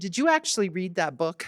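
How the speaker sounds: normal talking voice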